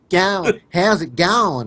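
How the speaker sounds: put-on Australian accent. Asked for their best australian accent, one player gives it a try: australian accent. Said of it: "can we hear your best Australian accents".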